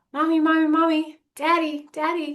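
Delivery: put-on very high little-kid voice calling out. Speaker explaining how a little kid gets parents' attention, imitating a little kid calling. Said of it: "What does a little kid do".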